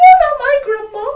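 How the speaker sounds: piercing, shrill, very high and very loud scream.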